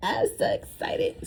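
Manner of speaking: mock excited squeak, very high and slow.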